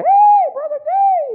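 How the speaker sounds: shrill, very high-pitched, loud voice. Retelling a man greeting him at his vehicle door: imitating a high-pitched voice. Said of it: "He had that high-pitched voice".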